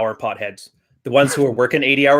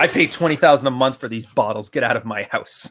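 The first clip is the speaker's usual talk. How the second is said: ordinary delivery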